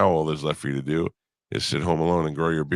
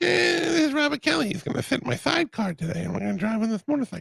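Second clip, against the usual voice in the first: squeaky, very high, rasping, rough put-on voice. Joking about being a guest on a show: high-pitched Mike Tyson voice. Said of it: "a little bit of high-pitched Mike Tyson".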